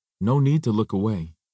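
ordinary talk

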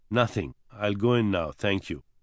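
usual speaking voice

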